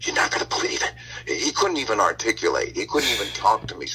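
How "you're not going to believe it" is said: high voice jumped up an octave. Retelling how Tommy broke the news to him, imitating Tommy's octave-higher voice. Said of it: "His voice was an octave higher".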